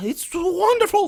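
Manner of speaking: very high-pitched, tiny, chattering gnome voice. A storyteller voices a small gnome after the creature is killed, high-pitched gnome voice. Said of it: "the gnome says".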